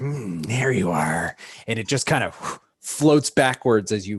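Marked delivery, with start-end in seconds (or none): 0.0-1.3 low floating-eye fantasy monster voice. Voicing a beholder that spots a jumping player: beholder creature voice. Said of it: "you can hear the beholder say".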